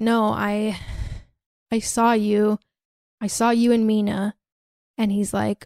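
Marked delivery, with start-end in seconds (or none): 0.0-4.3 slow, tearful, hurt, acted-out crying. Retelling a movie scene where a character confronts Charlie: imitating someone crying. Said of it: "crying and she's like".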